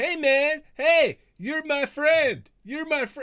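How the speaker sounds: very high, loud hollered shout. Acting out a familiar voice calling someone a friend, retelling a shout. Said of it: "And the shouting to".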